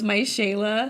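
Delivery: mock crying, put-on tearful voice. Retelling an actor's words about his daughter: imitating someone crying. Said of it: "And so he's crying, and he goes".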